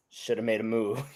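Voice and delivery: put-on under-breath mutter. Retelling a funny clip of a contestant: imitating Mitch muttering under his breath. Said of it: "under his breath, goes".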